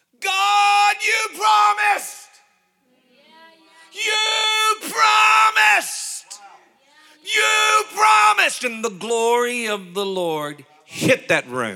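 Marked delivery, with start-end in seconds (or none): 0.2-8.6 very high, loud, drawn-out scream at the top of lungs. Retelling how a man on the back row called out to God, retelling a scream. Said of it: "starts screaming to the top of his lungs".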